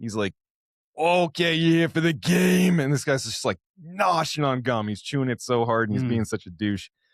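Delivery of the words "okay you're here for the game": put-on Brooklyn accent, pitched up. Retelling what the umpire says on greeting him: imitating a brooklyn accent. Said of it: "Brooklyn, he sounds like he's from Haddonfield".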